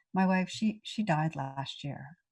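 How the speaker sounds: ordinary talk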